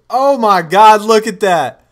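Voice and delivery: very loud, high-pitched excited outburst. Streamer reacting to a pick during a draft with chat, yelling. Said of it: "Sorry if I just yelled".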